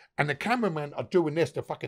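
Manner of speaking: normal talking voice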